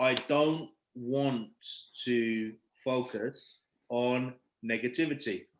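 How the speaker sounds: very slow, low, slowed-down playback sound.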